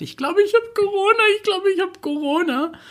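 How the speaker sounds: mock weeping and aghast, pitched way up high. Retelling what a man said on the phone, imitating someone crying, horrified. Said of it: "weinend und richtig... Entsetzt".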